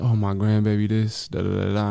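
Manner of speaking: ordinary talk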